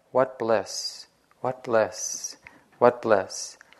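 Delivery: soft, hushed murmur to himself. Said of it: "talking to himself".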